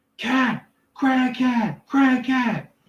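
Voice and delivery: very high, very slow, drawn-out panicked shriek. Voicing a distant townsperson raising an alarm: screaming NPC. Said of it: "someone screams out".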